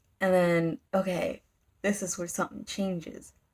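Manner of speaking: ordinary delivery, nothing marked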